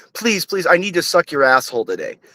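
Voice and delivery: mock pleading, begging woman's voice. Imagining a woman who begs to another speaker: mock pleading woman. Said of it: "imagine if a woman was like".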